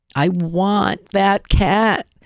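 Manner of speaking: very slow, yearning, strained voice, drawn out. Showing how to push toward wanting an object: yearning, strained voice. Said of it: "I'm going to stress my voice. ... You're putting in a yearning".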